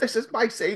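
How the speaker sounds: put-on abrupt, high, sudden shout. Recounting how someone flung off headphones and burst out; retelling a yell. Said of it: "flings off headphones and yells".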